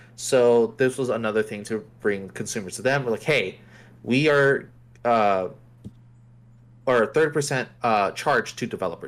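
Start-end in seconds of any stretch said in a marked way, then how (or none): none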